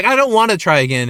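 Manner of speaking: plain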